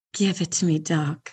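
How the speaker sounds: low, sexy voice. Asked by the other speaker to say it again, in a porn voice. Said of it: "Say it in your porn voice".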